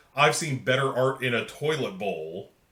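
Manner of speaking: ordinary delivery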